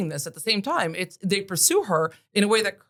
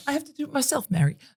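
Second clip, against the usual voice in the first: amateur put-on British accent, pitched up; 7 semitones higher than usual. Trying a British accent after others doubt they can do it. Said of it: "our British accents are amazing".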